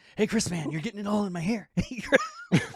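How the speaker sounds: high, sing-song voice, done badly. Acting out a scene with Tom Cruise: bad Tom Cruise impression. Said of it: "I can't do a Tom Cruise impression either".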